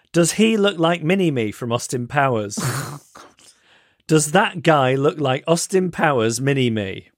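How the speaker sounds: blunt, tactless, straight-out mock child voice. A parent retells what the child said about a man nearby: retelling Gene's loud question. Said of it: "says in his loud voice".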